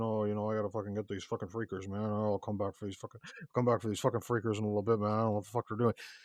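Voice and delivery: fast, rambling mumble with words run together. Describing a video game protagonist, imitating how he talks, mumbling. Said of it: "start talking like this, mumbling".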